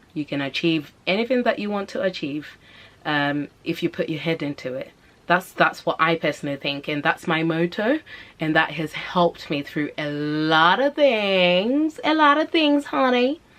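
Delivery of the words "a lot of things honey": higher-pitched fake American accent. Speaker sharing their personal motto, slipping into a put-on American accent. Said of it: "why did I just put my American accent on".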